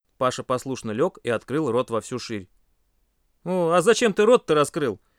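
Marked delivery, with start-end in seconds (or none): 3.4-4.9 easygoing, kindly, good-natured, genial delivery. An instructor to a group member lying with his mouth wide open; good-natured, smiling. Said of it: "добродушно улыбнулся".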